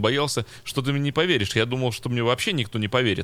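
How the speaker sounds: ordinary talk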